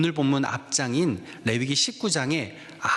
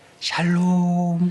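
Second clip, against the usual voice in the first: coquettish, sugary sweet voice, higher and louder; 4 semitones higher, 5 dB louder than usual. Acting out someone who yelled at family, then greets people at church in a coquettish sweet voice. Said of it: "간드러지는 목소리로 샬롬".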